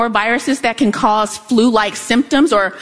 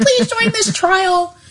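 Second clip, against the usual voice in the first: high-pitched announcer-style ad read; 8 semitones higher than usual. Retelling a radio ad for clinical trials: imitating a high-pitched ad voice. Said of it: "this high-pitched".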